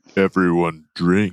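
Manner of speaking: voice dropped right down, low and deep. Asked to say everyone drink in a lower tone: lower tone. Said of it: "Tell me everyone drink, but in a lower tone".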